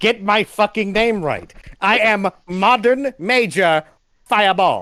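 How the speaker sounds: enraged, high, drawn-out furious shouting scream. Voicing a fireball character, screaming to be called by the right name. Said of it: "He's screaming out of fucking where Lazuli is".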